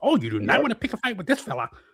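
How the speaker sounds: stuttering, high, swooping voice. Mocking a guest by doing a Jesse Eisenberg impression: stuttering Jesse Eisenberg impression. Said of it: "Stuttering, hunched over Jesse Eisenberg".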